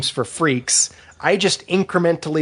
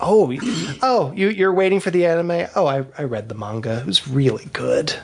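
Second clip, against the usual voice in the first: put-on snobbish, haughty voice. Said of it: "It's like".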